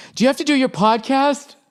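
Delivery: very high, panicky, panicked voice. Retelling how a wife asks in the morning: imitating a panicked wife. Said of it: "that panic your wife can have in her voice".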